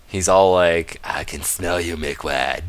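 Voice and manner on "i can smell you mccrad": very deep, slow, creepy spider creature voice. Playing a game, voicing the spider that's coming back in a creepy spider voice. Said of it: "That's what a spider voice sounds like to me".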